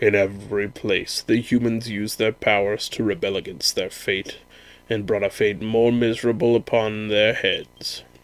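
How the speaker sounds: low, grandiose, archaic villain voice like a tyrant king. Reading the Dragon Lord's speech aloud, Dragon Lord villain voice. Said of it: "I am the [name], Master of Masters, King of Kings. / 'Tis regrettable indeed that thou shouldst brandish this power against me, for it is feeble in comparison to the power of mine own. / We're on the".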